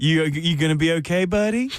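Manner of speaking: put-on condescending tone. Retelling what Buck said as they left the venue: imitating Buck, condescending. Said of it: "in the most condescending way possible".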